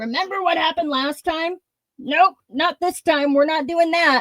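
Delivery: acted-out call, pitched high. Speaker voicing an inner guard that yells when you try to trust, yelling guard voice. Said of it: "that guard is yelling".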